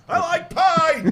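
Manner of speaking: very loud, high, shrill heckling shout. Acting out a heckler who shouts something during a set: pretend heckler shouting out. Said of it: "he's gonna start shouting something out".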